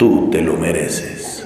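very low, slow, drawn-out commercial voiceover. Mocking an expensive perfume ad campaign: deep voice. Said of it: "Con una voz profunda".

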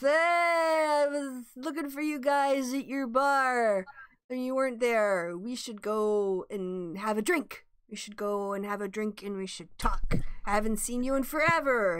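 put-on drunken voice. Voicing a halfling who plays a drunk to greet the party: playing a drunk. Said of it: "he plays a drunk".

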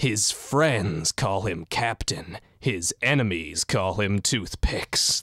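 grand, deep, epic movie-trailer announcer voice. Presenting the lore of a build, the speaker announces its nickname in an epic trailer voice. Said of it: "I gotta get like an epic trailer voice going here".

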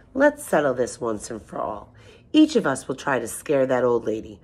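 usual speaking voice

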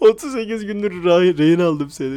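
loud, furious outburst, too angry for words. Streamer snaps at someone who won't let go of them, too angry to talk. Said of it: "Bak konuşamıyorum bile artık sinirden".

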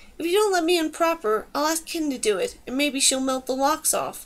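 plain reading voice

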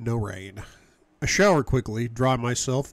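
plain

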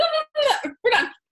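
frantic, hurried delivery, high-pitched and loud.

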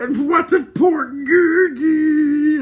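piercing, very high, very loud, very slow howl. After another is thanked with a deep bow, the creature howls. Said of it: "howled the creature".

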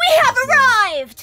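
really loud shouting voice. Announcing the group's arrival in character with a spell: really loud voice. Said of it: "thaumaturgy to make my voice really loud".

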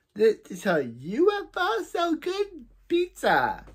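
very high, very drawn-out, swooping sing-song voice. Retelling a story's plot, doing a Missus Wong impression. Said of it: "my good Missus Wong impression".

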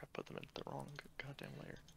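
ordinary talk, nothing marked

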